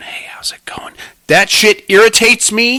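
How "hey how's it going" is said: soft, breathy ASMR whisper, close-mic. Describing ASMR videos of people close to the microphone: imitating an ASMR whisper. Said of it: "chicks whisper to them".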